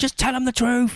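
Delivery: mock very high, loud shouting. Retelling what the mum shouted at her son: imitating a mum shouting. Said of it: "'cause she was shouting".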